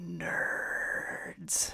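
breathy, airy whisper. Voicing a voice on a chill wind through the window: voice on the wind. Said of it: "a voice on the wind go".

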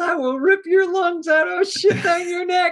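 play-acted screaming. Retelling a movie scene, a producer on the phone: imitating Tom Cruise screaming. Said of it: "Tom Cruise screaming at the guy".

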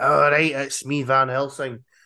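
put-on Scottish accent. Imitating a film's Van Helsing whose accent leaks into Scottish: Van Helsing with a Scottish accent. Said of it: "it sort of leaks into Scottish".

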